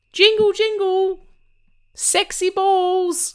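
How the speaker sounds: playful elf voice, very high, very slow, drawn out. Joking about what's jingling your bells at Christmas, in an elf voice. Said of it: "I was being an elf".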